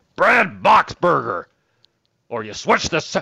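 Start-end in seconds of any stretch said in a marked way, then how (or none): 0.2-1.5 put-on, exclaimed voice. Telling listeners how to say the name Brad Boxberger: Wayne Laird voice. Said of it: "Make sure you do it in the voice of like Wayne Laird".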